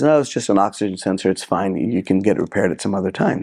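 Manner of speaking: ordinary delivery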